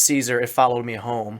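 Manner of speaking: ordinary talk, nothing marked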